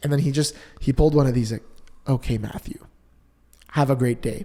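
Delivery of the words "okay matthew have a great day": fake-calm, put-on composure, simmered down, softened. Retelling how the seller ended the phone call: imitating a put-on calm voice. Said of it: "calmed his voice down, acting like he's calm".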